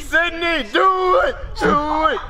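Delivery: very slow, very high, drawn-out shouted voice. Urging someone about to jump from the roof: yelling. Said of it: "Stop yelling".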